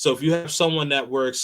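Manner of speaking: ordinary talk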